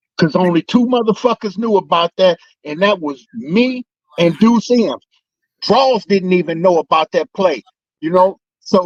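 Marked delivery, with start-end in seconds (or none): none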